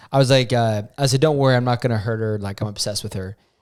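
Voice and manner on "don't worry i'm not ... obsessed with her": plain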